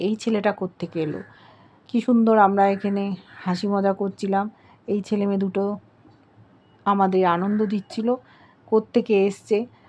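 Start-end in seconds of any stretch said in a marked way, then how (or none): none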